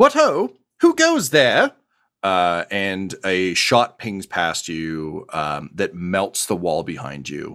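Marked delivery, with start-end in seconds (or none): 0.0-1.7 very high, loud, swooping calling out. Voicing an unseen figure who challenges the group: calling out to strangers. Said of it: "a voice, uh, calls out".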